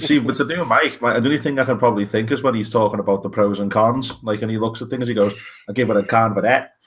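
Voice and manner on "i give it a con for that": put-on heavy New York accent. Doing the one line that sums up Mike: Mike impression, heavy New York accent. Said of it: "the heavy New York accent".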